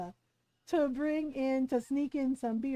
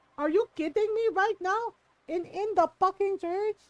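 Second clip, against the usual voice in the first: scolding voice, higher; 6 semitones higher, 4 dB louder than usual. Retelling a mother scolding relatives at church: imitating mom scolding. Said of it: "you hear my mom scolding them".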